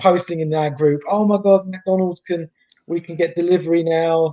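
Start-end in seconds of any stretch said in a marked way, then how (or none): 1.1-4.3 put-on, overjoyed, happy, delighted exclamation. Retelling a friend's post about delivery returning: imitating Claude's happy post. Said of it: "he was so happy".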